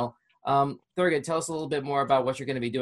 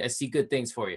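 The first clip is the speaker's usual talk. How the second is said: ordinary talk, nothing marked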